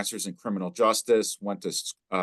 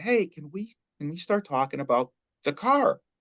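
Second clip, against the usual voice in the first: acted, really nice, pleasant, lightly pitched-up voice; 8 semitones higher than usual. Quoting what she said to his friend, retelling a pleasant tone. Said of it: "So really nicely, pleasant tone of voice".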